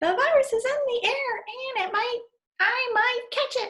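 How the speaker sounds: very high invented cartoon character voice. Speaker improvising a line in a made-up voice. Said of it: "or just make up a voice".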